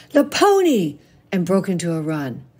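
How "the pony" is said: shrill, very high, sudden shout. A girl sees her uncle's car and horse trailer and drops her snowball, yelling.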